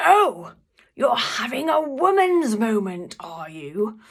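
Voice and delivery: very loud, big, drawn-out booming voice. Recalling an office moment, the speaker quotes the team leader calling across the office, mock booming. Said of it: "in this big booming voice".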